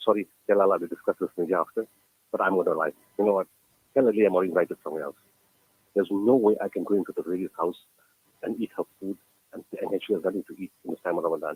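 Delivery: ordinary talk, nothing marked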